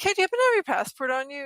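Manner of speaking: high, quick, sly, casual detective tone.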